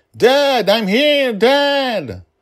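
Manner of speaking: very high, very loud, very slow, drawn-out calling out. Narrator reads a dragon calling after her departing father, calling out to Dad. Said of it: "calling out unheard to father".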